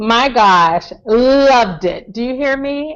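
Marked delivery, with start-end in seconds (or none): 1.1-1.8 loved strongly stressed, hit very hard. Raving about a scene between two characters: stress on LOVED. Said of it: "This is capital L O V E D".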